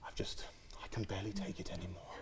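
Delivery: mock very quiet, angry-disappointed teacher tone. Describing how teachers tell students off, mimicking a teacher's disappointed tone. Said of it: "that disappointed tone".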